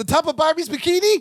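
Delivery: high, chirpy, put-on character voice. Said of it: "And he goes".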